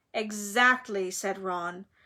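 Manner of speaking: ordinary delivery, nothing marked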